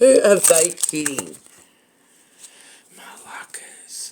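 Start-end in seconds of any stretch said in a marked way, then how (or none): 3.0-4.1 mumbled quietly under the breath, quieter. Reacting to a tarot reading's message: muttered under the breath. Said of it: "I had to mutter that under my breath".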